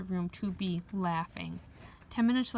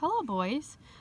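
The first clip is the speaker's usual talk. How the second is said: bright, cheerful, cheery voice, pitched up; 6 semitones higher than usual. A woman coming down the hall greets the boys, in a cheery voice. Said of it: "she said in a cheery voice".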